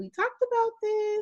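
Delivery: soft, gentle, high-pitched falsetto.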